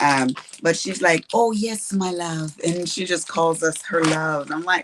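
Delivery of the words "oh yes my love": gentle put-on Irish accent, high and slow. Speaker quotes a woman from a design team who calls them love, imitating her little Irish accent. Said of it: "with her little Irish accent or whatever she's from".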